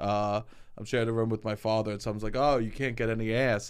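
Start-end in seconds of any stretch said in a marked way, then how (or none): none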